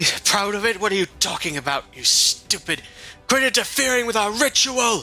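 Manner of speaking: angry shouting. Game narrator voicing a character who objects to interference with a ritual, yelling angrily. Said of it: "he just keeps like yelling at you".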